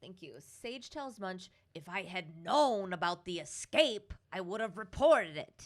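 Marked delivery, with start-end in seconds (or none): 1.8-5.7 deliberately bad, hammy film-star put-on voice, belted very loud. Quoting what Sage tells Munch, in an Al Pacino impression. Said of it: "He's just my terrible impression of Al Pacino".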